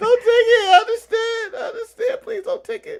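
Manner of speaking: high, mock sobbing voice.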